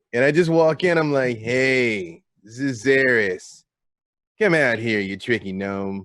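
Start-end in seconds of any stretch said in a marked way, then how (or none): 1.4-6.0 slow taunting tone with hey stretched long. Calling out a gnome after casting a spell to amplify the voice: booming, magically louder voice. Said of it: "make my voice boom three times larger".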